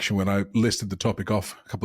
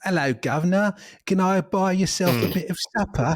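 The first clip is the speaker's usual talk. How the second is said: clichéd English accent, pitched very high; 9 semitones higher than usual. Mocking bad old-English acting, speaker demonstrates: stereotypical English accent. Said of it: "it's just like the stereotypical English person".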